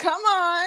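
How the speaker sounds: hyped, energetic ad lib call. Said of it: "there was".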